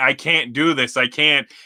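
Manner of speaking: near-tearful, almost crying voice. Retelling a wrestler pleading with her partner mid-match: imitating someone almost crying. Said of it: "almost crying".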